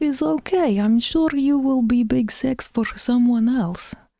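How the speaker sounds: terrible put-on Russian accent. Voicing an imagined reply to someone, in a bad Russian accent. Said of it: "I need to brush up on my Russian accent. That was terrible".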